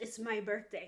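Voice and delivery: soft, muttered, half-swallowed words under the breath. Retelling how a book character revealed her birthday: mumbling a retold line.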